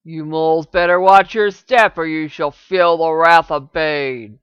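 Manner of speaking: very loud, menacing, threatening orc voice. One of the orcs warns them before spitting and leaving: deep, threatening voice. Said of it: "In a deep, threatening voice".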